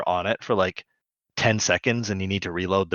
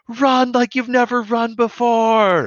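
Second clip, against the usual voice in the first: very high shriek with pitch climbing upward; 5 dB louder than usual. Retelling how Bob leans in toward Dot and answers her; retelling a scream in her face. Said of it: "leans in and screams".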